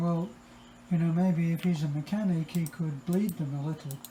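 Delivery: plain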